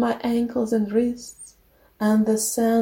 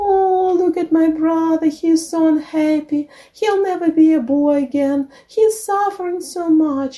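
high, syrupy, falsely sweet tone; 6 semitones higher, 4 dB louder than usual. Narrator reading the witch speaking to the young merchant, sweet voice. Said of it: "said in a sweet voice".

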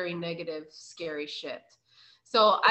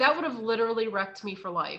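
ordinary delivery

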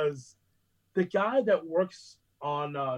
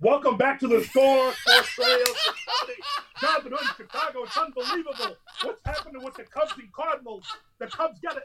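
mock very high, loud, shrill sports-radio host scream; 9 semitones higher, 5 dB louder than usual. Retelling a radio broadcast meant to drown out another host: imitating screaming a radio show. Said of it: "I'm gonna scream about the Cubs".

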